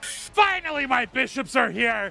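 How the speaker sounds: imitated screaming voice. Voicing the Loot Lord as his bishops arrive: Loot Lord screaming. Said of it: "with the Loot Lords screaming".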